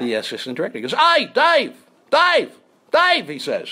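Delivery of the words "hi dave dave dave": put-on very high, slow, drawn-out, raised Australian accent. Retelling a call from the australian assistant director, imitating an australian accent. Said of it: "it's the Australian guy".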